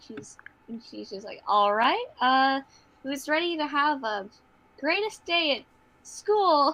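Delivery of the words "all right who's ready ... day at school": eager, upbeat, excited, swooping sing-song. Voicing a character who stands up straight before school: really excited. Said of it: "she's really excited".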